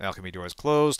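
normal talking voice

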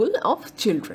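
ordinary delivery

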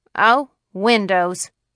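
scornful, dismissive. The county attorney answers a man asking him to look at the windows, scoffing. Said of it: "said the county attorney scoffingly".

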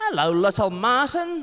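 put-on New Zealand accent, pitched very high. Greeting Little Martin as if Peter Jackson were saying it, in a Kiwi accent. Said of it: "we had to say it in like Kiwi accent".

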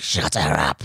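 deep monster voice. Retelling what he said to Cootie while a woman screamed: Satan voice. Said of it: "like a Satan voice".

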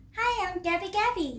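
high cartoonish voice. Imitating a Toy Story character, Gabby Gabby voice. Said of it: "그 개비개비 친구를 한번 따라볼게요".

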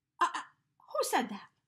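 high, startled, taken-aback stammer. Narrating a fable, Elephant jumps when the melon cries out, startled. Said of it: "Elephant jumped".

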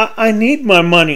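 tiny, small, slow little voice. Girl held in her mother's grasp speaks up, in a small voice. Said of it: "In a small voice".

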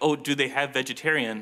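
normal talking voice

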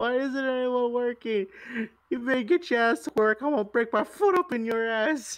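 exaggerated fake fury, very high, over-exaggerated. Yelling at stalled teammates in the game: exaggerated mock anger. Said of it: "over-exaggerate how angry I am".

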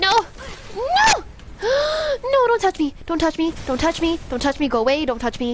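high, terrified screaming with long drawn-out "no". A thing called a drag keeps coming at the speaker; terrified screaming. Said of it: "that was terrifying".

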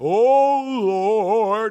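booming, loud, ornate preacher voice, drawn-out "oh". Recalling how the man leading the service talked, imitating flowery prayer talk. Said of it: "just get into this flowery stuff".

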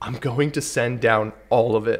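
passionate, tender, deeply moved, loving tone. Retell what you heard Jesus say, acting out a deeply moved, loving voice. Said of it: "in a very emotional, passionate, loving, deeply moved manner".

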